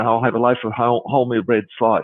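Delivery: ordinary talk, nothing marked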